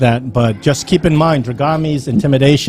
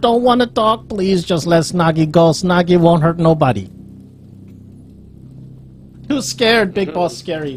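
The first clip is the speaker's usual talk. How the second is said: frightened small creature voice; 4 semitones higher than usual. Voicing Snoggy while being questioned by the other players, scared Snoggy voice. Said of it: "Snoggy is so scared".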